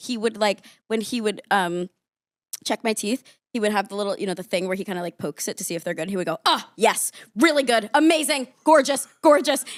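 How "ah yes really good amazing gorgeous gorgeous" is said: play-acted, effusive, over-eager, high and loud gushing. Speaker retells a dentist checking their teeth, imitating an enthusiastic dentist. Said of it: "He also was so enthusiastic".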